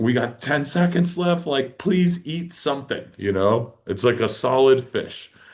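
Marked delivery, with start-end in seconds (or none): 0.0-3.1 put-on excited yelling, high-pitched screaming. Retelling the moment a fish kept hitting the spread: retelling own screaming.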